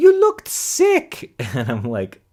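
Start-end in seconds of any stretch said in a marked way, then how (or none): 0.0-1.3 put-on Italian accent, very high and loud. Retelling what the aunt said, imitating aunt's italian accent. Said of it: "She has an Italian accent".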